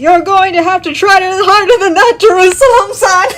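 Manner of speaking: dramatic anime battle yell, loud, pitched way up. Narrating a drawn panel of a figure dragging itself from the ground, anime voice. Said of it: "anime voice".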